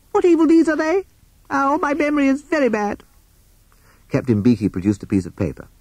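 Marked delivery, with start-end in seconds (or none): 0.1-3.0 very high, squeaky, excited little voice. Reading a story where Bat speaks up at a trial, Bat's excited squeak. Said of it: "Bat suddenly gave an excited squeak".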